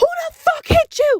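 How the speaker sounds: put-on very high, shrill, loud furious screaming. Retelling the aunt finding the little cousin hit in the face: imitating aunt screaming. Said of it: "She is screaming".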